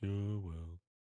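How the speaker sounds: gloomy, downcast donkey voice. Voicing the horse Alan again: Eeyore kind of voice. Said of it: "an Eeyore kind of voice".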